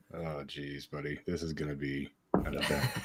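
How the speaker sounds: mumbling under breath. Reacting as the podcast goes live and starts: mumbling under his breath. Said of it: "mumbling things under his breath".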